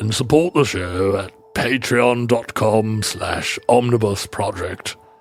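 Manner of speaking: low, deep British orator accent. Plugging the show's Patreon as if in a wartime speech, use a Churchill accent. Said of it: "very hard words to say in a Churchill accent".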